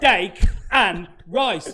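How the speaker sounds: very loud, high-pitched shout. Retelling a restaurant order in Brazil the waitress didn't understand, imitating Ran's loud order. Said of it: "doesn't matter how loud you say it".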